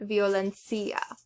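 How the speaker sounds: violencia said with stress on the wrong syllable.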